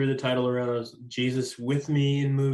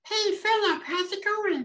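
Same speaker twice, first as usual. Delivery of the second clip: put-on very high-pitched, babyish three-year-old voice. Explaining where a voice came from, imitating a three-year-old cousin greeting the speaker. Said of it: "try to imitate him".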